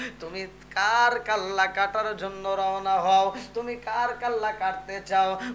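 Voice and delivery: soft, pleading voice while crying.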